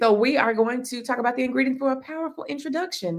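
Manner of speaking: rattled-off auctioneer delivery. Introducing the next topic to your live viewers, you use an auctioneer voice. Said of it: "Now I got my auctioneer voice on".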